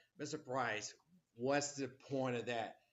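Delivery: ordinary delivery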